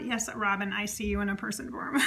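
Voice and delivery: ordinary talk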